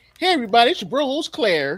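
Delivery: high, folksy country-twanged show host voice. Describing how Claire's quick shots intro starts, imitating Claire's country twang. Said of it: "it starts off country".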